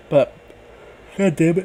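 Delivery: spoken mid-yawn, yawning. Previewing an upcoming wrestling match while yawning. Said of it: "I'm yawning".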